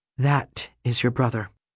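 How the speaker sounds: chilly, icy, cold delivery. Narrator reads a woman who stands after a long silence; cold voice. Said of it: "says in this cold, cold voice".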